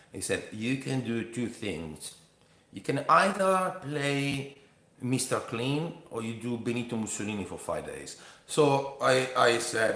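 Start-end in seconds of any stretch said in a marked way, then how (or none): 0.6-8.2 put-on heavy French accent. Retelling what the workshop teacher said: imitating Philippe Gaulier's French accent. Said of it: "he speaks with a French accent like this".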